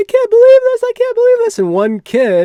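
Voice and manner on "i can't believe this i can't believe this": very high, very loud, shrill, dramatic screaming. Retelling how student protesters screamed dramatically: imitating protesters screaming dramatically. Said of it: "screaming and yelling and screaming and yelling".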